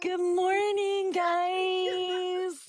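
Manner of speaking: put-on vlogger voice. Mocking a content creator setting up to fake waking up. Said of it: "I'm not gonna fake wake up".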